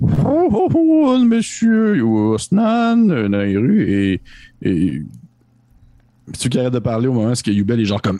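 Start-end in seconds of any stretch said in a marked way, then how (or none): 0.0-3.8 very high, swooping, drawn-out voice. Voicing Malazalkar greeting the arriving party: Malazalkar voice. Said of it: "Vous entendez la voix de Malazalkar qui fait".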